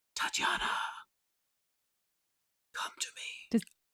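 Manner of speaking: put-on mournful young man's whisper, very quiet. A game master voices a voice carried on the wind through the gazebo: sad young man's whisper. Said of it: "it's like a whisper".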